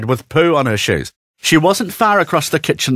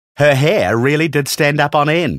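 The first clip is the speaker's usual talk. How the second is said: plain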